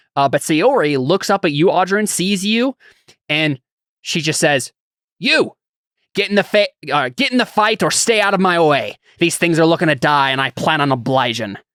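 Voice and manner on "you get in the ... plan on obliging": thick put-on pirate accent throughout. Voicing a fighter who tells a player to join or step aside: pirate accent. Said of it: "It seems like she has a pirate accent now".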